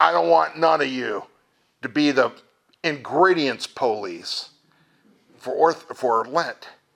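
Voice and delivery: put-on rough-edged New Jersey accent. Quote the bishop of your diocese speaking about Lent, in Bishop Thomas's rough New Jersey accent. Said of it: "rough New Jersey accent".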